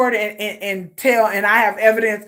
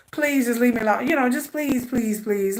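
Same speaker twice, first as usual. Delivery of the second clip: mock, worn-out, tired, repeated begging; 5 dB quieter than usual. Retelling a girl on a tape begging to be left alone: imitating someone begging. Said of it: "you can hear in the audio just begging".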